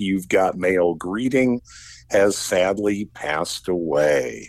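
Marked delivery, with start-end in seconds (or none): none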